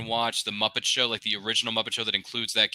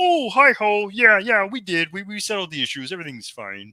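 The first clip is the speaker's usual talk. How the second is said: put-on frog voice, higher, louder, slower; 10 semitones higher, 6 dB louder than usual. Imagining Kermit's reply at Comic-Con, speaker does Kermit the Frog voice. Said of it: "And then Kermit could be like".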